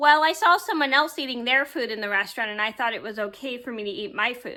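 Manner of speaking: normal talking voice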